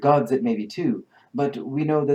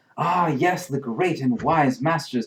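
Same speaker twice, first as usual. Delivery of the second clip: fawning, reverent, gushing, effusive adoration; 3 semitones higher than usual. Voicing a villager praising the great masters: gushing about the masters. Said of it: "he is going to kind of gush about the masters".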